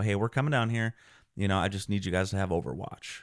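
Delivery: plain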